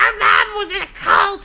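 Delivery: put-on shriek, very high and drawn-out. Imitating the kids about their mother: imitating kids screaming. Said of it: "They'll scream".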